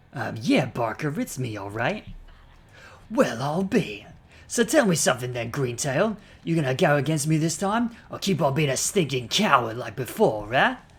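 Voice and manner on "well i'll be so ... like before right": poorly done put-on British accent. Speaker voicing a character who taunts greentail, bad british accent. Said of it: "which bad British accent this was".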